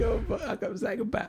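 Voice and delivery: mocking with laughter. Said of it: "This guy's laughing at me like".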